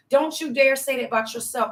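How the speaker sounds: ordinary talk, nothing marked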